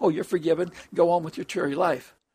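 ordinary delivery

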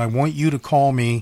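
ordinary talk

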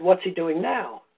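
ordinary delivery

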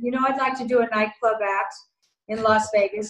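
ordinary talk

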